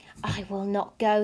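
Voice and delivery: ordinary talk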